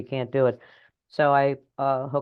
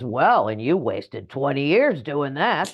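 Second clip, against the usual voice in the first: big, loud, booming voice; 2 semitones higher, 4 dB louder than usual. Describing inner voices, the big loud one pipes up: big loud voice. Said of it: "the big loud voice pipes up and says".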